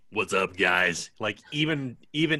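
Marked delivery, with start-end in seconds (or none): 0.1-1.1 low, deep voice grinding thick gravel through every word. Imagining the cast returning after a long break: extra gravelly Will Arnett voice. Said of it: "even more gravelly".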